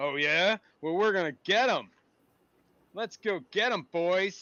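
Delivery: loud, high-pitched creature voice. Voicing the red caps deciding to go after the player: red cap creature voice. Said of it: "And all the red caps are like".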